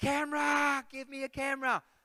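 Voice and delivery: very high, very loud, shrill excited yell. Retelling surfacing after a shark swam underneath, retelling a yell. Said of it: "I just yelled out".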